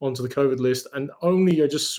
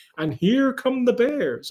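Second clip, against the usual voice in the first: put-on very high, snide, sarcastic announcer voice; 9 semitones higher than usual. Retelling how the broadcaster spoke about the Bears during yesterday's game, imitating a sarcastic Jim Nantz. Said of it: "Jim Nance sarcastically goes".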